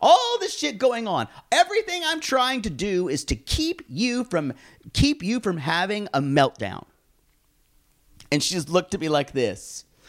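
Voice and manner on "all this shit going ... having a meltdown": mock heated angry outburst, high-pitched. Retelling blowing up at mom over the iPad: imitating own angry outburst. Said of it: "I felt myself going off".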